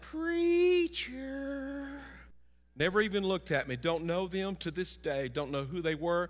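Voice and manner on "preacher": spooky, eerie, hellish demonic voice. Preacher retelling a stranger calling out as he passed a room, eerie hellish voice. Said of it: "this eerie, hellish voice said out loud".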